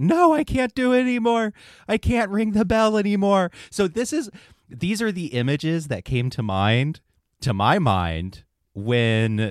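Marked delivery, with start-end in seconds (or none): 0.0-3.5 mock very high, loud, tearful sobbing wail. Picturing Salvation Army bell ringers who can't go on, imitating them crying. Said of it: "like crying".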